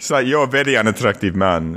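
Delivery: really bad, clumsy fake Eastern European accent. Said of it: "that's a really bad Eastern European accent".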